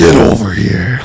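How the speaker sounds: loud shout in a fighting-game character style. Performing a line from Mortal Kombat: Scorpion voice. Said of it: "that's Mortal Kombat".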